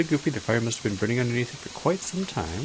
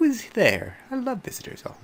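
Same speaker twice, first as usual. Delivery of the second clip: very high, squeaky little witch voice; 12 semitones higher than usual. Narrating a knock on a candy cane door, the witch answers: squeaky witch voice. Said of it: "A squeaky voice from inside the house says".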